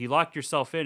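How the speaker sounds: normal talking voice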